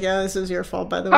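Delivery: ordinary delivery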